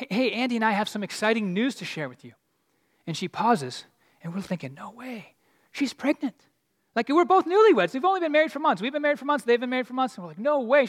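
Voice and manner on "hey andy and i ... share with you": ordinary delivery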